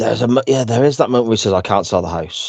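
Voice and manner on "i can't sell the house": mock deadpan delivery. Describing a scene where a man speaks at the camera, retelling a deadpan line. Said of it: "it's very much deadpan at the camera".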